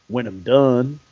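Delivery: put-on big, very low, deep Texas accent. A man stops his leg workout to answer an autograph request, in Wetteland's big Texas accent. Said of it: "in that big Texas accent that he has".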